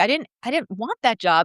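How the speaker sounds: ordinary talk, nothing marked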